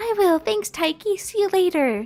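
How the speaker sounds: put-on high, childlike voice of a young schoolkid. Playing through a game aloud, the speaker voices a character's line: grade-schooler voice. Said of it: "I sound like a grade schooler".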